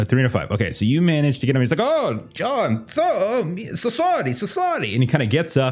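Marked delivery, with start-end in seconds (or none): 1.8-4.9 put-on very high, very slow, drunken slurring. Voicing a drunk driver who just got caught: drunk character voice. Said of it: "you can tell he's drunk".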